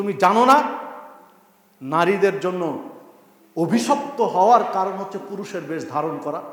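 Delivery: ordinary delivery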